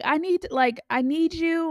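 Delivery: stretched, deliberate yelling. Retelling yelling at dad in the shower: imitating own yelling. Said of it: "yelling at him in the shower".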